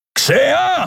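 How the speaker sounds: long, shrill, very high, drawn-out bellow. Having bolted the outer door, he calls across the ship; roaring across the ship. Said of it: "Brüllte er quer durch das Schiff".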